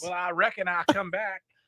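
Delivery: high, put-on Carolina Southern accent. Joking about a friend coming back from North Carolina: put-on Southern accent. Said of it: "everybody in South Carolina apparently talk like that".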